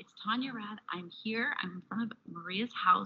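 hushed, soft, secretive half-whisper. A host outside a prize winner's house before she knows she won, half-whispering. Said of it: "I'm whispering because she doesn't know".

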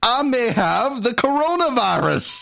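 exaggerated, heavy southern drawl. Speaker riffing on coronavirus symptoms; Rhett Butler meets Foghorn Leghorn voice. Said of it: "because I am talking like Rhett Butler meets Foghorn Leghorn".

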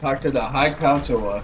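ordinary talk, nothing marked

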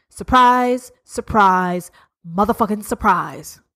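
sarcastic, dropping low in pitch. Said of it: "I'm being sarcastic".

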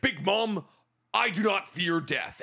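put-on weighty English with Japanese speech cadence. Mocking an English dub that copies the Japanese cadence: imitating Jinbei's English dub. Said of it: "He's like".

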